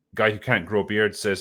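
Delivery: ordinary delivery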